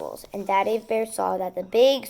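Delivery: plain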